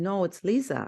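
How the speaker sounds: put-on thick, heavy Jamaican accent. Retelling how mom corrected the spelling of a name, in a thick Jamaican accent. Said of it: "from her thick Saint Thomas, Moortown, maroon Jamaican accent".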